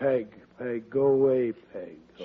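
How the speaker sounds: talking as if asleep. Talking in sleep after being asked for a quarter: talking in sleep. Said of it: "he's talking in his sleep".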